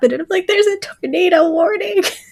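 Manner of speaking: very high, tearful, crying voice. Retelling telling a neighbor about a tornado warning: imitating own past crying. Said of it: "in tears".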